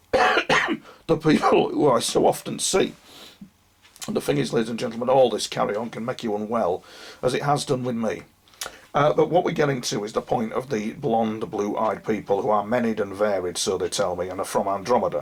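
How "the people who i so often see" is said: slow, failing whisper of a voice. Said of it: "I'm losing my voice".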